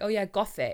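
put-on British accent on the word Gothic. Retelling how they said a word earlier: British accent. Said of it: "I said it with, like, a British accent".

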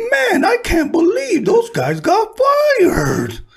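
very high, slow, drawn-out, swooping sing-song. Retelling what Steve said one day, imitating Steve's voice. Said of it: "and in his voice".

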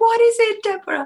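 high-pitched bellow at full volume. Retelling how he answered her call to open, imitating someone shouting. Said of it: "He was shouting".

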